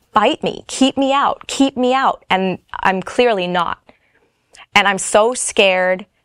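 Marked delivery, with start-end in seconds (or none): 0.1-2.2 restrained, mild, high-pitched acted half-yell. Speaker recounts a frightening moment, retelling her yelling at the speaker. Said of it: "she keeps yelling at me".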